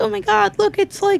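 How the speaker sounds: very high, giddy, gushing fangirl squeal. Imitating a parent going crazy at Comic-Cons: imitating dad fangirling. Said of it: "That was a good impression of me".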